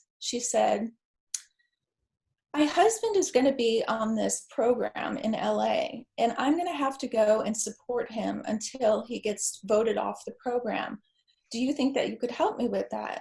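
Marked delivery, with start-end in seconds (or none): none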